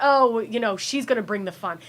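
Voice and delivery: ordinary talk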